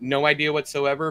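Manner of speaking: plain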